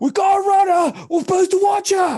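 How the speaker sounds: piercing, high shriek at full volume. Voicing a guard who spots someone running off: screaming. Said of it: "Weetabix screams out".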